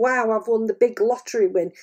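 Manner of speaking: plain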